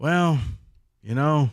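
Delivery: put-on, weary coach voice. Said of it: "take the deep breath and go".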